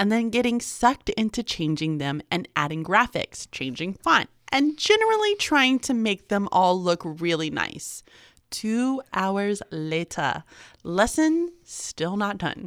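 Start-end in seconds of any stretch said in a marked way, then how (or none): 8.5-12.7 kids' cartoon time-card narrator announcer voice. Telling about making lesson slides, speaker announces the time jump in SpongeBob narrator voice. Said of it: "in like the SpongeBob voice".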